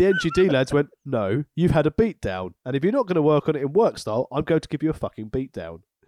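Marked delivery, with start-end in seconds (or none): none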